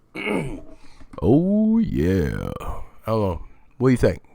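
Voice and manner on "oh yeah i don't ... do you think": put-on voice, louder than normal. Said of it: "Keep the voice like this?".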